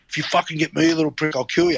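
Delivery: put-on deep Russian-sounding voice. Retelling a threat someone made, imitating Kevin Campion's deep rusky voice. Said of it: "his rusky voice".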